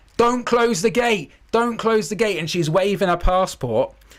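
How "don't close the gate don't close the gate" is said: imitated shouting, pitched high. Retelling a late passenger running for the plane: imitating someone shouting. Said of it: "she's shouting".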